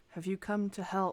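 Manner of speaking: female-sounding voice. Voicing a dragon speaking into the players' minds: very soft feminine voice. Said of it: "this very soft, um, sort of feminine voice".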